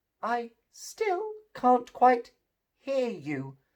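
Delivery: weak, feeble, soft, high fox voice. The fox answers the gingerbread man, speaking in a feeble fox voice. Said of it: "said the fox in a feeble voice".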